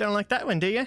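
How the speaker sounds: high, cackling, gloating taunt. The game master voices a creature taunting the player after hitting them with acid, cackling. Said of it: "cackles and says".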